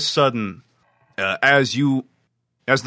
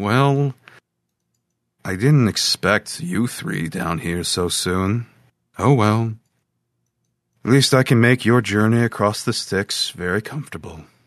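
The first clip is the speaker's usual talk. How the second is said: composed, unruffled, calm, even voice; 2 semitones lower than usual. Game master voices a figure greeting three players in the dark, calm voice. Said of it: "And a calm voice says".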